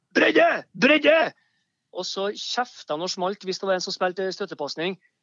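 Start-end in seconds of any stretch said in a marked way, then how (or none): 0.1-1.3 high, loud, coach-style shouting. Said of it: "han ropte jo kun".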